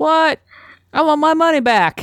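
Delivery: put-on vaguely Southern accent. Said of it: "I'm sorry for the vaguely Southern accent".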